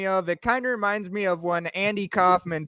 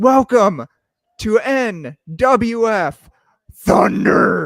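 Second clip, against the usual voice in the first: booming, slow, drawn-out ring announcer voice; 2 semitones higher, 9 dB louder than usual. Picturing a friend in the ring like Vince McMahon: Vince McMahon ring announcement. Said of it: "like Vince McMahon used to do for WrestleMania".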